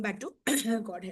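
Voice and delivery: low, soft, rough, sick-sounding voice. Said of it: "sorry about my voice, got a little bit of cold".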